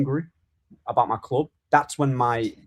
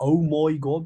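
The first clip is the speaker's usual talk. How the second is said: put-on Brummie Birmingham accent; 3 semitones higher than usual. Chatting about accents, a speaker imitates how Bellingham and Grealish talk, in a Brummie accent. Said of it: "like that's how they speak".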